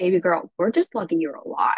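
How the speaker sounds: put-on thick Russian accent. Speaker quoting what the oncologist said at every visit, in a thick Russian accent. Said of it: "in her thick Russian accent".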